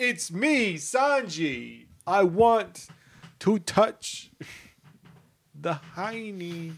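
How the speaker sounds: heavy high Brooklyn accent with one word stretched. Joking around with the others, voicing a character: Brooklyn Sanji voice. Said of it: "Always comes back to Brooklyn Sanji".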